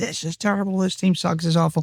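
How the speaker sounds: mild, half-shouted yell. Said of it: "I went to all the home games screaming".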